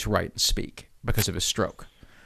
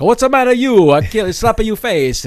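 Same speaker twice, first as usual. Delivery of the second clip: very high, very loud caricature Italian accent; 10 semitones higher, 9 dB louder than usual. Retelling how actors get cast with a stereotypical Italian voice. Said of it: "stereotypical kind of Italian voices".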